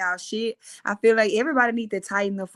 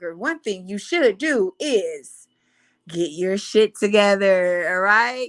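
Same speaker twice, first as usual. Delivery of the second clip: proper, polished news anchor delivery; 4 dB louder than usual. Speaker addressing viewers switches to talking like a news anchor. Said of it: "I gotta talk like the news anchor".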